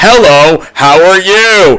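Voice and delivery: very slow, eerie, creepy digitized synthesized voice. Retelling a game's opening dialogue, imitating a terrifying digitized speech sample. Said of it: "this man's voice is just like".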